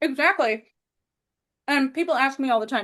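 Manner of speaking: talking around a mouthful, chewing through words. In a conversation, the speaker keeps talking while chewing. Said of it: "Sorry, I'm joke chewing".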